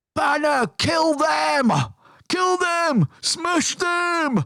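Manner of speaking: very high, shrill shout. Describing a crowd across the street, acting out what someone shouts: retelling a crowd member's shout. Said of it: "Somebody shouts".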